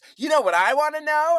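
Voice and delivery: put-on shouting girl voice. Retelling how a girl in a group shouted to her friends: imitating a girl shouting. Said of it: "one of the girls shouts to her friends".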